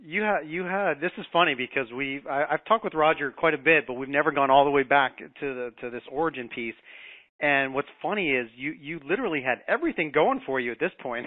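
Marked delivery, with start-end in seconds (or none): 8.8-11.2 heavy, pointed sarcastic irony in swooping sing-song. Talking to someone about how his story began; sarcastic. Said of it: "i'm being sarcastic".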